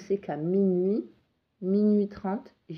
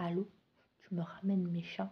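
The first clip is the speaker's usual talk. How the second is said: hushed whisper, much quieter; 10 dB quieter than usual. Retelling a midnight call from an unknown caller, whispering. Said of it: "Mais vraiment en chuchotant".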